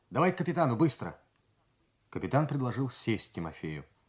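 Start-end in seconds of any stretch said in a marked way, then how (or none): 0.1-1.1 hurried, rapid, blurted, rattled off, pitched up. Narrator reading the third mate summoning a fellow officer to the captain, blurted out rapidly. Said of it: "скороговоркой выпалил".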